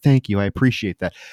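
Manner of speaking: put-on very kind tone. Retelling a movie scene where a character thanks someone: imitating a very kind tone. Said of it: "She turns very kind again".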